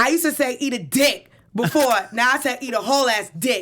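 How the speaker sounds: mock, put-on yelling. Reading out a celebrity's blunt post, retelling a yell. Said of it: "So this is just me yelling".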